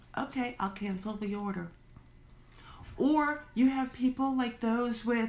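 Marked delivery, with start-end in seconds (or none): none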